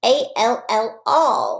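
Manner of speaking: put-on high, cutesy, babyish little voice. Speaker guiding listeners through spelling words, baby voice. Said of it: "That's my baby voice".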